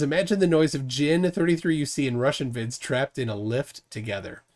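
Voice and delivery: ordinary talk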